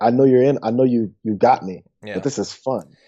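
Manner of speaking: put-on words broken up by laughter. Retelling how a college friend answered being called out: imitating Chris laughing while talking. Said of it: "laughs and goes".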